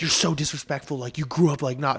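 put-on angry man's voice, cursing. Retelling a road-rage driver cursing at them from the window, imitating an angry man cursing. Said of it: "he's just cursing at me".

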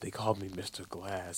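very quiet, slow, mumbled mutter under the breath. Quoting a film character to someone, in a muttering, very quiet Mr. Glass voice. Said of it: "He's like muttering, like it's like very quiet".

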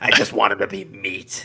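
put-on very loud, slow smoker's voice. Repeating a joke line right after suggesting a smoker's voice: put-on smoker's voice. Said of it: "you just needed to say that with the smoker's voice".

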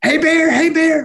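very high, all-out screaming call. Retelling a bear charging at them, acting out screaming at it. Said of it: "and I'm screaming".

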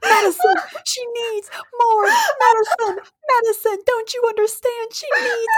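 frenzied, frantic, very high-pitched hollering. Retelling a story, acting out what a man in it said: retelling a yell. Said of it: "He is yelling".

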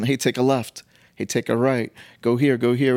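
ordinary delivery

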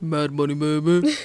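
as deep as the voice goes, dropped low rumble. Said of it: "it's actually scary how deep I can make my voice".

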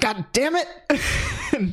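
very high, swooping, exasperated, angry shouting. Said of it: "And he's yelling".

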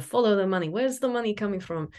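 put-on Lithuanian accent. Quoting a grandpa's old saying about money: imitating grandpa's thick Lithuanian accent. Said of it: "He was Lithuanian, had a very thick accent".

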